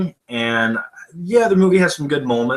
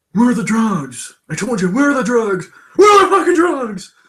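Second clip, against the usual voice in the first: very high, insistent, demanding voice; 10 semitones higher, 4 dB louder than usual. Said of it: "Nicolas Cage acting like Batman impression".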